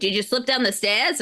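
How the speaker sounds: imitated New York accent. Retelling the EMT's question after a fall: imitating a New York accent. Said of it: "pure New York".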